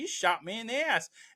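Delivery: very high-pitched, incredulous, disbelieving tone. Retelling a movie scene where Alonzo can't believe he was shot: imitating Denzel Washington's disbelief. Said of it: "he's just like, he can't believe that Ethan Hawke did that".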